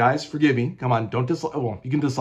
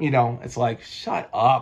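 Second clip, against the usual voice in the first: ordinary talk, nothing marked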